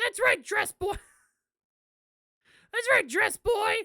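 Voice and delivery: very high, very loud, throat-straining screechy silly voice. Voicing a game character's reply, Toad voice. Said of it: "Why did you give Trillo the Toad voice?".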